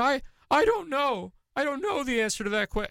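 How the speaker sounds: very high, mocking put-on voice. Retelling how the president mocked a witness's testimony: mocking impersonation of Blasey Ford. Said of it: "talked like this and said".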